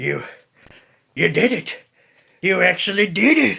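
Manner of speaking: very loud, rough, creaky, rusty-sounding voice. Voicing an older goblin prisoner, stunned by rescue: rough voice, unused to speaking. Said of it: "his voice is rough, as if he's unused to speaking".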